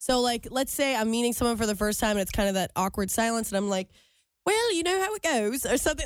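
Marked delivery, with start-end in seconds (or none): 4.4-5.6 put-on British accent, pitched up, slipping out. Retelling awkward small talk with a stranger: put-on british accent. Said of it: "speak in British accents".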